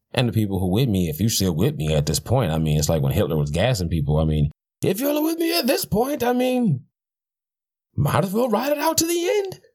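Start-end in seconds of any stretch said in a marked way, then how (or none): 4.8-9.5 horrible fake German accent, pitched very high. Mid-rant, the speaker puts on a horrible German accent. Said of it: "That is my horrible German accent".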